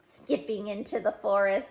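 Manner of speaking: plain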